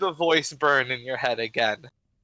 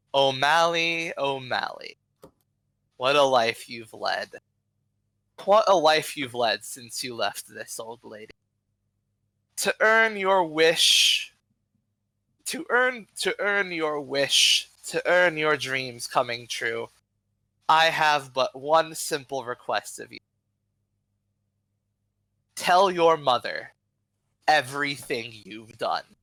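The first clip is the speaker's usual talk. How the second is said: dragon voice with echo. Narrator voices a dragon speaking inside the listener's head, echoing dragon voice. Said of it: "you hear the dragon's voice echo in your head".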